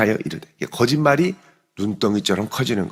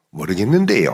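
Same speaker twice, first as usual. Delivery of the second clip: Gyeongsang regional accent with dialect intonation; 2 semitones lower than usual. Showing how one phrase reveals where someone is from, in a Gyeongsang accent. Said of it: "이렇게 하면 경상도 사람".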